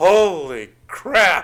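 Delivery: "holy" dragged out long, catchphrase-style. Quoting a favorite catchphrase of the character Frank: Frank catchphrase impression. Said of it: "you said it, like, just right".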